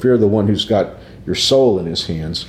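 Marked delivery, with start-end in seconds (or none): none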